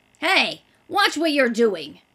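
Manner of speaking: loud, grouchy, cross, grumpy outburst. A tiny little man scolds Hanna for leaning over his crate, grumpy voice. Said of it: "cried a grumpy voice".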